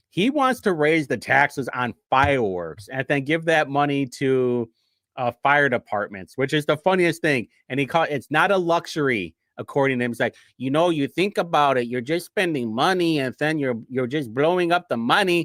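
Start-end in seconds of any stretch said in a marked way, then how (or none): 10.6-15.5 put-on mimicked Mexican accent. Quoting a man who wants to raise taxes on fireworks, in a put-on Mexican accent. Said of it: "I have the best Mexican accent".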